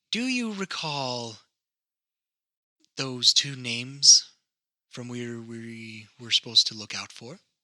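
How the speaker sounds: quiet whisper in character. Voicing a character who leans over to another: whispering in character. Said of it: "she's kind of whispering this to you".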